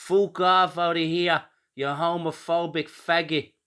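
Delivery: put-on broad, thick Dublin accent, pitched high. Retelling what a woman protester said to the speaker, in the thickest Dublin accent. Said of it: "in the thickest Dublin accent she hypocritically said".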